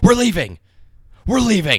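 top-of-the-lungs, very high, loud, swooping scream. Speaker retelling a man screaming while stuck at a gate, retelling a scream. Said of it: "just screaming".

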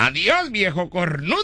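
mocking, taunting shout. Telling a story, speaker voices the neighborhood loafers yelling at a man, retelling a street shout. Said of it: "griten estos vagos de la colonia".

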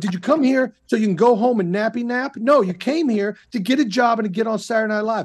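mock yelling, acted out. Retelling what you yelled at yourself back then, retelling yelling at himself. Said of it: "I'm literally yelling at myself like a crazy person".

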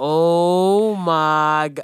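loud, exasperated, fed-up cry, oh stretched long. Retelling sitting through praise dancing: imitating own exasperated reaction. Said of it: "I be going crazy".

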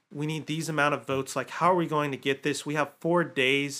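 plain

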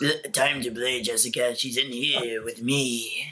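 very slow, low, drawn-out, sinister doll voice. Pitching how the killer doll would sound in the film: creepy doll voice. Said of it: "who's gonna voice this, the creepy doll".

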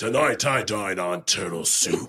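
cheesily dubbed martial-arts voice, bad movie dub. Mid-conversation, a speaker breaks into a bad karate movie voiceover. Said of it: "You sound like a really bad voiceover for a karate movie".

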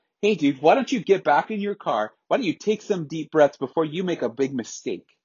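play-acted heated, angry yell. Retelling yelling back at a man who was yelling at them, retelling an angry yell. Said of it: "I yelled back at him".

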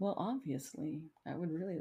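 very quiet, hushed, formal and proper phrasing. Speaker imitates how Steve sounded at that moment, imitating Steve's formal monotone. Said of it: "such a monotone voice".

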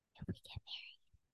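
very quiet, hushed, barely voiced whisper. Sharing news that is not confirmed yet, whispering. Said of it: "I have to whisper because it's not confirmed".

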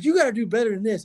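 frantic, unhinged announcer voice. Retelling a color commentator's reaction to a player's ejection, mimicking a berserk rant. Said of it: "he's going absolutely berserk".

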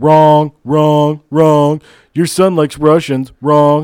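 booming, slow, each word boomed out. Imagining a debate across the table: Donald Trump impression. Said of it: "Donald Trump across the table just going".

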